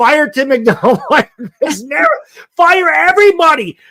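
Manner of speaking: put-on exasperated screaming rant. Recalling why their voice is sore, retelling own screaming. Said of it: "because I was screaming".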